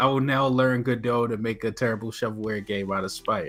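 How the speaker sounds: usual speaking voice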